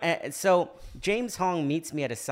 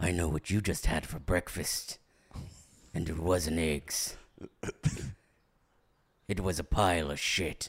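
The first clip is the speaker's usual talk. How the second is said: low, menacing impression voice. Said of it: "That was my Liam Neeson impression".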